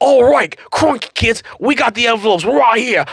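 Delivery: put-on high-pitched voice in an Australian accent. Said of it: "You found an accent you're good at".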